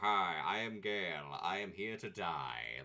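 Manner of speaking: very loud, slow, booming delivery. Equipping armor for Gale, mocking him as helpless: voicing Gale. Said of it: "so he's not, like, so, like".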